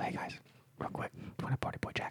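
whispered aside. Pulling the others aside in character as they leave: whispering in their ears. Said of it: "I whisper in your ears".

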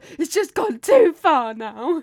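very loud furious outburst. Retelling a reaction to a joke made about him: imitating angry Max. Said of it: "and Max got so angry".

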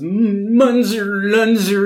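goofy quavering voice. Retelling what a woman said when questioned at her house, goofy quavering voice. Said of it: "It's like this goofy kind of like quavering voice".

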